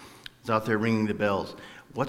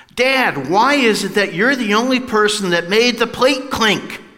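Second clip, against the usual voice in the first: put-on piercing, very high, very loud shrill kid voice; 12 semitones higher, 11 dB louder than usual. Describing a scene, the speaker quotes Dennis asking his dad in a church pew: loud voice as Dennis. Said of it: "Dennis says in a very loud voice".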